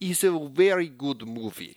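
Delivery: put-on slow, thick Russian accent, laid on heavily. Speaker redoes a quote from Ray's movie review: Ray impression, heavier Russian accent. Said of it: "I think I need to do a little more Russian".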